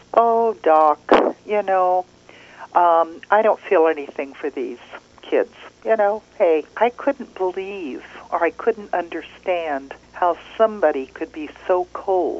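normal talking voice

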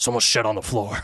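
put-on voice full of mock disgust. Retelling what his dad said, popping his head out of the stall, imitating his dad's disgust. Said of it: "That's your impersonation of your dad?".

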